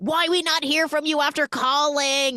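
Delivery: put-on Serbian-accented speech. Retelling a story, the speaker quotes a woman: broken English Serbian accent. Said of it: "broken English / Serbian accent".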